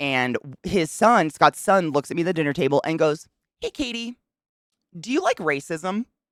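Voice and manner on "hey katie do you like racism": put-on earnest, dead serious, pitched-up child's voice. Retelling a boy's question at the dinner table, imitating a serious child. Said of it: "Just serious".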